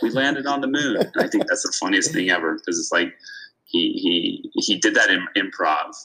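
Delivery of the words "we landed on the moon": high-pitched, screamed-out blurt. Speaker recounts a film scene where the actor screams in a lobby: retelling Jim Carrey's scream. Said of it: "he like screams out in the lobby".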